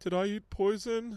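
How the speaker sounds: put-on very high, slow, sheepish little-kid voice. Retelling a child's question after grabbing a jalapeno: imitating Isla, sheepish. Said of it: "just very sheepishly go".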